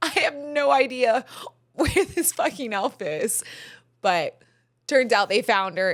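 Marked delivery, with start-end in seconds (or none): 0.0-3.4 acted, frantic, flustered, high, panicked blurt. Retelling a morning search for the elf: imitating own panic. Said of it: "I literally panicked this morning".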